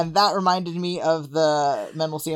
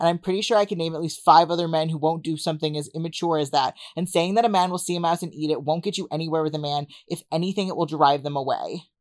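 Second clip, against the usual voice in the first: ordinary talk, nothing marked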